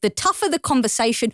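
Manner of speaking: ordinary talk, nothing marked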